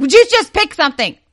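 very loud, high-pitched exasperated yell. Retelling how a co-host yells when nothing gets picked: imitating someone yelling. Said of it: "she has to yell at me".

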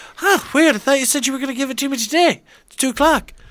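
high-pitched, loud cartoon-character voice. Retelling a cartoon scene, imitating Stewie. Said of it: "And he's like".

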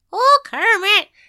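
put-on character voice, Irish accent. After doing Kermit, speaker attempts the other character: Miss Piggy voice, Irish-sounding. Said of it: "She does not have an Irish accent".

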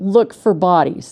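plain

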